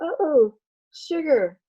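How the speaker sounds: cooing voice, pitched high.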